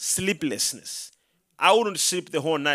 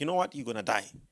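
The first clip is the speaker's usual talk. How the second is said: soft, low, hushed half-whisper, breath only; 5 semitones lower, 6 dB quieter than usual. Retelling what the devil half-whispered in the mind: imitating the devil half-whispering. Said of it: "Several times he whispered to me".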